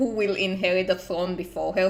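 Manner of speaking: ordinary delivery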